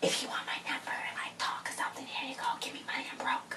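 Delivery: unvoiced, very soft whisper.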